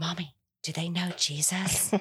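put-on child's voice, whispering. Retelling what Hannah asks when meeting someone new: imitating Hannah whispering. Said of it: "she always whispers".

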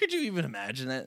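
acted, sardonic, sarcastic tone. Acting out how Rose Quartz says her line, mock-sarcastic. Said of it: "sarcastic, kind of uh, sardonic".

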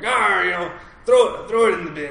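put-on pirate voice. Retelling what the house residents, all dressed as pirates, said: put-on pirate accent. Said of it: "I haven't practiced my pirate accent".

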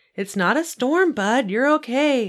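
soothing, reassuring, comforting high voice. Patting a dog scared by the dishwasher, the speaker calms him: reassuring. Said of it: "I told him reassuringly".

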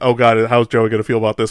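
plain

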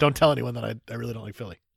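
mock conspiratorial, winking secretive tone. Mocking the other speaker's wink about philly: imitating a winking secretive aside. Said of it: "Why are you winking saying".

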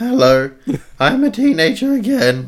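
cracking voice. Joking with the other speaker about voice cracks, voice breaking like a teenager. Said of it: "my voice is breaking".

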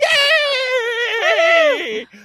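cheering, high-pitched and loud. Cheering after saying listeners won an hour of babble: Kermit the Frog voice. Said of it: "I'm totally doing the Muppet Kermit the Frog".

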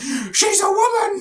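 very high-pitched voice. Retelling a scene from a film, imitating Vera Farmiga's character. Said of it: "And then Vera Farmiga being like".

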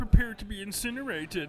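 high, classic cartoon Martian alien voice. While talking about the aliens in Space Jam, do a Marvin the Martian accent. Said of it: "A classic Martian accent".

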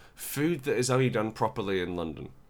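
plain

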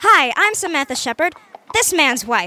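put-on American accent. Trying out an American voice for a cover story: put-on American accent. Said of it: "I can try my hand at imitating these folks".

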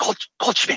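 hushed whisper with a false start. Retelling someone in the front row correcting a name: imitating a whisper.

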